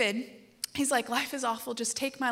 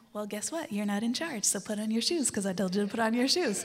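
put-on sweet, most loving tone possible.

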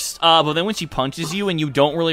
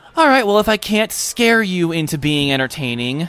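speaking through a light chuckle. Narrating a character to a player after an awkward pause: chuckling while speaking. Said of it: "She chuckles at the awkward pause and goes".

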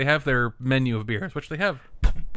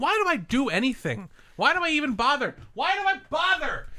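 very high, exasperated, frustrated yelling; 13 semitones higher than usual. The others forgot the celebration; yelling in frustration at them. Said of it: "Stop yelling at the people walking by".

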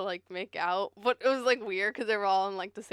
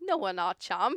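awful put-on British accent, slower pace. Retelling how Barry answered a British woman, in a bad British accent. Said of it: "I'm awful at British accents".

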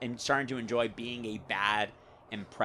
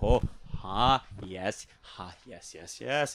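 put-on halting actor voice, lower; 3 semitones lower than usual. Finding an impression while talking softly: Jeff Goldblum impression. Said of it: "almost do almost a Jeff Goldblum".

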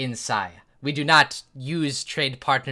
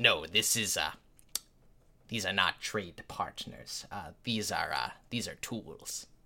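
very soft, hushed, low-key big-creature voice; 6 semitones lower, 12 dB quieter than usual. Voicing a large dragonborn worker who bumps past the players: voicing a large blue dragonborn. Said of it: "and he kinda pushes past and he says".

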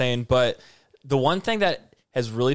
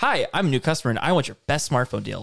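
smug, self-satisfied, pushy, demanding tone. Mocking the first guy in the commercial: imitating a smug customer attitude. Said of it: "the attitude of both those guys".

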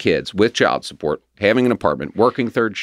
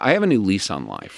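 usual speaking voice

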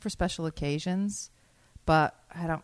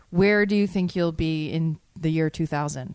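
ordinary delivery

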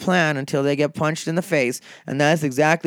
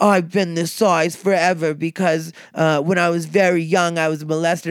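terrible fake British accent, slower. Retelling what a woman from london said to the speaker, terrible british accent. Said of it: "that's my terrible British accent".

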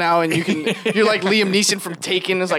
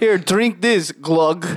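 put-on stock Russian accent. Retelling a man seen with a young woman: stereotypical Russian accent. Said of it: "the stereotypical like Russian accent is like".

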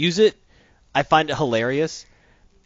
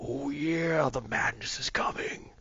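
slow, teasing whisper drifting from afar; 11 dB quieter than usual. Describing distant dragon calls in a game mod: Macho Man Randy Savage voice. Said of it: "but in the mod".

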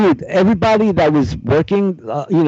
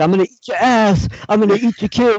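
put-on breathless, angry rant, higher-pitched; 6 semitones higher than usual. Retelling a press conference brawl: breathless Mike Tyson impression. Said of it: "Mike Tyson was losing his breath".

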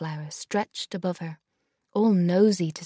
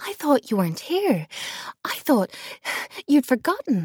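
breathless, panting, voice up high; 7 semitones higher, 3 dB louder than usual. A granddaughter, greeting her grandmother, speaks breathlessly. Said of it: "Lila said breathlessly".

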